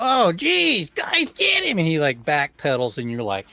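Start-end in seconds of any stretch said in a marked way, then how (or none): 0.0-1.8 panicked, alarmed weasel creature cry. Voicing a weasel who sees an attacker rush up: panicked weasel cry. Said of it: "his eyes go big and round, like".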